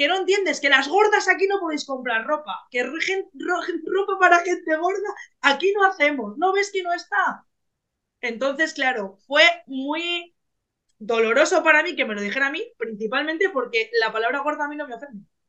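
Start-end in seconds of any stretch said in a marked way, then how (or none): 0.0-7.5 scolding shout with voice pitched up. Retelling what someone shouted at her while she kept insisting: retelling a shout. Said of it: "me dijo gritándome".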